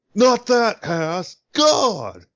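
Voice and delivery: mad, very high-pitched, squeaky, swooping outburst. Describing how someone they know talks when mad: mock-angry Napoleon Dynamite voice. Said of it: "when Mike gets mad, he talks like".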